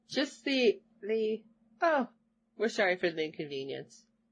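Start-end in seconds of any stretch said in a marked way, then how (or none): none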